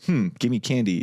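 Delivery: ordinary talk, nothing marked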